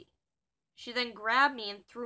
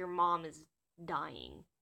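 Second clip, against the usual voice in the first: ordinary talk, nothing marked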